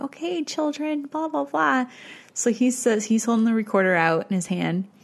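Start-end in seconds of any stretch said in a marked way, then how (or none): 0.0-1.9 put-on high baby-talk voice for small children. Showing how someone talks to little kids: talking to little kids. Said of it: "the little kid voice".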